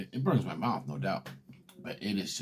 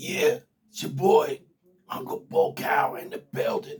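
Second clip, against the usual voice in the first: raspy, very loud, very high-pitched voice; 9 dB louder than usual. Recalling how the voice sounded after it came back: imitating own past raspy voice. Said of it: "It was raspy, real raspy".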